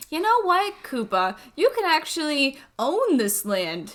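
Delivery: mocking, sarcastic, swooping sing-song. Retelling a princess mocking a rival over land: imitating Toadstool, sarcastic. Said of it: "in an act of sarcasm".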